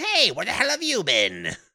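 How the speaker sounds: very high, shrill, loud, swooping, chummy tone. Retelling how a character greets another: imitating the Joker greeting an old friend. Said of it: "greets him like an old friend".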